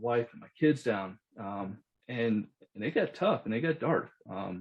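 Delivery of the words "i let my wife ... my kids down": plain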